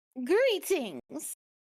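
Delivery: tiny voice, pitched very high. A voice from behind the party greets a traveler: tiny voice. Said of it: "Comes a tiny voice from somewhere behind us".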